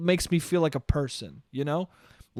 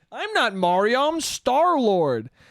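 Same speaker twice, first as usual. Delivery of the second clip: mocking impression, higher pitched; 6 semitones higher than usual. Mocking an actor's voice casting, the speaker does a mocking Chris Pratt impression. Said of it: "Chris Pratt being like".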